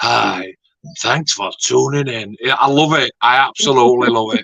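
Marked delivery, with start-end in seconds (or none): 0.0-2.4 lulling, soft, soothing, sleepy bedtime murmur. Imitating a man whose voice could send a baby to sleep: John impression. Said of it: "Could send like a baby to sleep with that voice. It's like".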